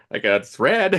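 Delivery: laughing while speaking. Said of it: "And they're like".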